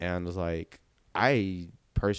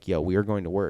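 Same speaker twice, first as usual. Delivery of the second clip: put-on holler, louder; 5 dB louder than usual. Retelling how someone in the next car called over: imitating someone hollering. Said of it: "hollering at me".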